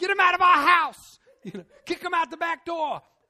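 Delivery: very loud, very high, big sergeant yell. A speaker imitates a man on the sideline yelling at players; imitating a big sergeant's voice. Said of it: "had a great big sergeant's voice".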